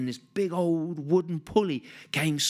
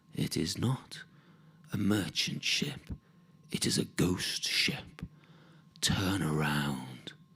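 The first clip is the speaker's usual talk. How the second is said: chilling, soft, cold, slow hushed whisper; 11 semitones lower, 5 dB quieter than usual. Telling a sea story, voicing a kobold's warning: soft, cold voice. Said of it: "that soft, cold voice that says".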